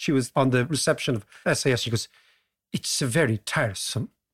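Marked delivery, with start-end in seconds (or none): 2.7-4.1 clumsy, bad put-on Swedish accent. Retelling what an SAS receptionist said to them, in a bad Swedish accent. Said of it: "You need to work on that accent".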